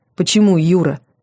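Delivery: ordinary delivery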